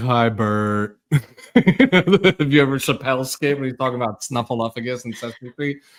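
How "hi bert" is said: teasing, mocking impression voice. Parent teasing their son for how he greets grandma on the phone, mocking him. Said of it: "I make fun of him like".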